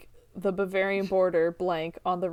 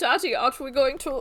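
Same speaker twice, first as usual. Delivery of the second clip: put-on British accent, higher; 6 semitones higher than usual. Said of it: "and a British accent".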